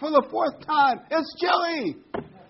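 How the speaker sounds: high, loud, slow, exasperated bellowing yell.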